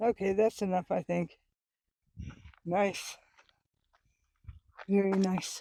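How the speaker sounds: panting, out of breath. Out of shape at a higher elevation than home, huffing and puffing. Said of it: "I'm huffing and puffing".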